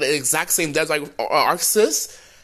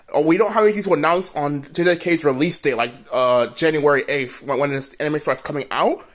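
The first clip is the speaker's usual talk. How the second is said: usual speaking voice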